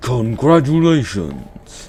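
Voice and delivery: video-game announcer voice. Reading out a result email, in a Smash Bros announcer voice. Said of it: "That's my Smash Bros voice".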